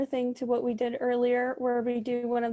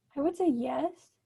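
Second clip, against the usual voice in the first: yes said with rising, question-like tune; 3 semitones higher than usual. Student answering the teacher's question, in a questioning rising tone. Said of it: "Don't say it with a question mark in your voice".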